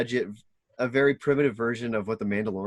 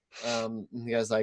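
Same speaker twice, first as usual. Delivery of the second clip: ordinary talk, nothing marked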